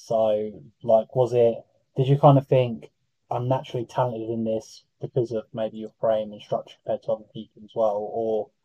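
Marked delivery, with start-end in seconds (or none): none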